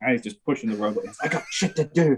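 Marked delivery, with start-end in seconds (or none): 1.3-2.2 furious, pissed-off, high-pitched dismissive tone. Retelling a moment in the welding tent after a fight: imitating a furious Matt Maxon. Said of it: "Matt Maxon was so pissed off".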